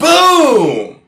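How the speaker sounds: loud, high aggressive boom.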